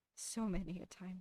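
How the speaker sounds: downtrodden. Replying to teasing about energy on a podcast, downtrodden. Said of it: "You sound really downtrodden by that".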